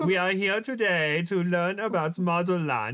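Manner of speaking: put-on German accent. Showing the only German accent they can do, Klaus German accent. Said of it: "the only German accent I could do is like Klaus from American Dad".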